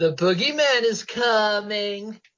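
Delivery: very slow taunting voice, "coming" stretched out. Describing how a bully teases a boy at Halloween, in a Lonnie accent. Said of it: "That was a good accent".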